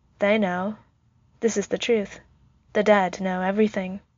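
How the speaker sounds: ordinary delivery, nothing marked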